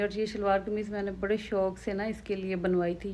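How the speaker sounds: ordinary talk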